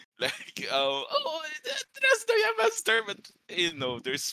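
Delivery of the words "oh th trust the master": panicking, higher. Voicing companions in free fall from the sky: panicked voice. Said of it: "there's panic in their voices".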